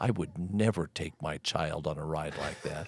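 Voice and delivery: put-on angry voice. Retelling a young son's reply after a roller coaster ride: imitating an angry reply. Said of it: "angrily looked up at me and said".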